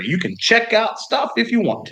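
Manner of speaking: put-on Southern drawl accent, pitched way up. Offering a guest use of the library: Southern accent. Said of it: "I don't know why I have a Southern accent now".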